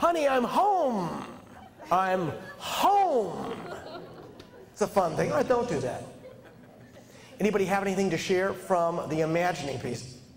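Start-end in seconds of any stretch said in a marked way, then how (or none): 0.0-3.5 very slow, joyful, full-voiced, drawn-out. Leading an exercise, the speaker demonstrates coming home: full, happy voice. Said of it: "And you can use the full voice".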